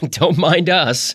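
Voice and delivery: light chuckle in a very high voice. A young woman slipping past a kissing couple on the way to the ladies room, chuckling. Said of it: "chuckled the other".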